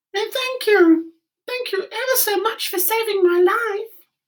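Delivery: tiny, very high, squeaky little mouse voice. A freed field mouse speaks up to the woodman in a squeaky little voice. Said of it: "it said in a squeaky little voice".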